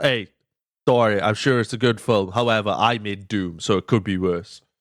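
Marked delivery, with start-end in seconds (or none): none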